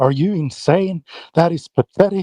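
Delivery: mock open revulsion, disgusted and incredulous. Imitating how the other speaker sounded: imitating someone sounding disgusted. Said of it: "I love how disgusted you sound".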